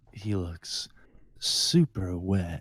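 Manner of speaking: very slow, close-mic ASMR stage whisper. Joking about getting close to the mic: close-up asmr voice. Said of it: "I can pull off my pop filter and it's like".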